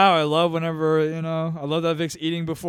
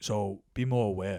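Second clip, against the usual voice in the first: put-on blunt tone, lower and quieter; 8 semitones lower, 9 dB quieter than usual. Retelling what Ronnie said after the show: Ronnie Chang impression. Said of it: "that was a good impression".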